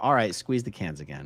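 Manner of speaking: ordinary talk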